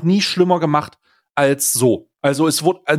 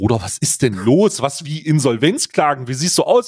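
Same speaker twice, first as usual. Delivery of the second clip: ordinary talk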